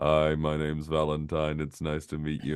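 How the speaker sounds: low, soft, uninflected robotic monotone. Retelling how they introduced themselves at twelve, speaking like a robot. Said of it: "I would kind of speak like a robot".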